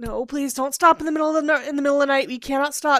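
high, loud, frightened, nervous voices. Retelling how carriage passengers plead not to stop at night: imitating nervous passengers. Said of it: "getting really nervous".

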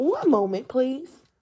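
voice breaking and cutting out. Recording a podcast, pausing for a moment, crackling voice. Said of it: "my voice is crackling and all of a sudden going out".

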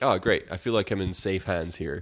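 ordinary talk

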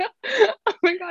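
helpless, high, breathless laughter.

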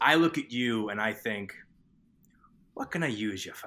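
put-on with a Boston accent. Retelling the movie scene where Leo eats lobster, in Leo's line, the way Nana talked. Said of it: "That is exactly how my Nana talked".

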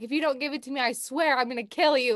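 frantic, high-pitched screaming, freaking out. Retelling a chase, acting out the pursuer threatening the man he is chasing, imitating someone freaking out. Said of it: "like screaming at him".

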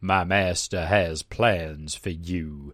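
loud, very slow, drawn-out drawl. Narrator voicing a masked, robed figure addressing the reader, drawling. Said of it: "it drawls".

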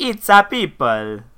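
put-on Italian accent. Redoing a misheard phrase, playing it up as Gino De Gambo Italian accent. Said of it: "Bring that more Gino De Gambo".

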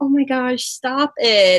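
slow, play-acted, airheaded, dumb-sounding voice. Retelling own past reply to a partner's compliments, imitating acting all dumb. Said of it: "acting all dumb".

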